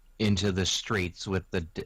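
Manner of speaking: normal talking voice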